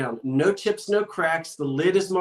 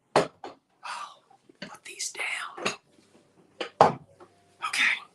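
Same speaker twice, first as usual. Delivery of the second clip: hushed, soft, breathy whisper; 5 dB quieter than usual. Right after an auction countdown ends, whispering. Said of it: "I don't know why I'm whispering".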